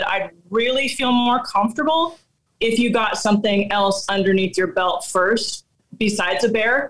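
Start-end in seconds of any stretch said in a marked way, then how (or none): none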